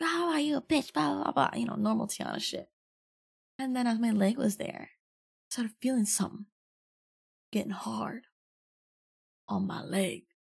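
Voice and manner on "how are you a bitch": mock loud, high-pitched, eccentric yell up close. Retelling yelling close to someone's face in a car: imitating own yelling. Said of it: "yelling at him".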